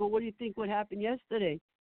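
ordinary delivery

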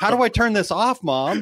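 put-on very high, loud, alarmed kid-like voice.

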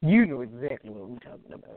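very low, deep, dropped voice. Teasing another speaker about what they mean: Ron impression. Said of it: "Was that your Ron impression?".

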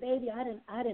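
sugary whispery put-on voice. Mocking what women want men to say: imitating a sweet, sugary whisper. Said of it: "say it all sweet and love and whispery and sugary".

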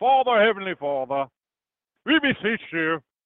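put-on lofty, lilting, grand English accent. Showing how people put on a voice when praying, grand English lilt. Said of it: "adopt a grand English lilt".

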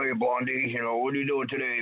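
put-on deep voice. Retelling how he greeted the aunt at the restaurant: Hulk Hogan deep voice. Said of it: "with a deep voice and everything".

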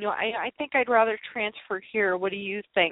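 ordinary talk

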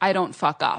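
mock dead flat, low, bone-dry, unbothered deadpan. Retelling Ina's answer to a question in front of an audience, mock-deadpan Ina impression.

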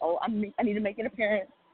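ordinary delivery

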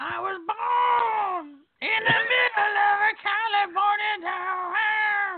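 very high, very slow, with "town" drawn out. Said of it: "that's my best, uh, [name]".

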